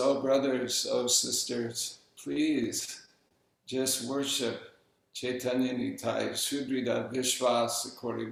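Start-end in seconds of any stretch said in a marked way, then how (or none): none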